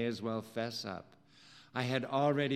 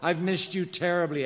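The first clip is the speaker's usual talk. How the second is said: gasped, much higher and louder; 6 semitones higher, 6 dB louder than usual. Narrator reading their own first-person line in a fiction scene, gasped. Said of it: "I gasped".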